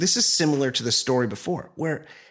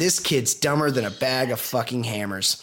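normal talking voice

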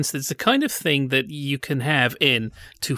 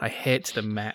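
normal talking voice

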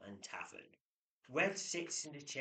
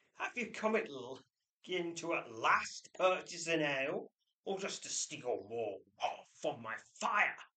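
angry snap with a raised voice; 4 semitones higher, 8 dB louder than usual. Narrating a scene, Red Galt turns and snaps at Quiff in an angry tone. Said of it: "snaps at him in an angry tone".

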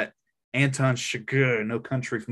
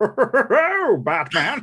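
super campy, shrill, swooping, over-the-top villain voice; 11 semitones higher, 6 dB louder than usual. Showing how the villain would say the hero's name: super campy villain voice. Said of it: "he's gotta be super campy".

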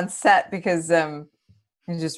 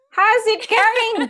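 put-on high-pitched, slow Indian Australian accent. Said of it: "nothing like an Indian Australian accent".

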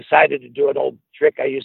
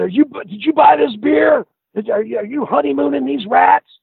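mock yelling and screaming, pitched much higher; 12 semitones higher than usual. Recounting a man searching the room for rats, retelling his screaming. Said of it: "he started screaming and yelling".

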